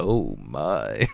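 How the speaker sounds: very low, deep exclamation. Joking about how the co-host sounded: George Takei voice. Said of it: "I thought you were gonna be like".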